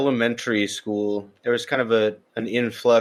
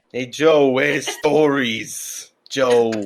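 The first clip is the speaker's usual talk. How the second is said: fake Italian accent, higher pitch; 4 semitones higher, 3 dB louder than usual. Asking another speaker for more stories: put-on Italian accent. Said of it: "like, an Italian accent?".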